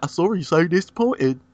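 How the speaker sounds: mocking, bad fake British accent. Teasing another speaker's bad British accent by echoing their line, mocking fake British accent. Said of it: "It's just like".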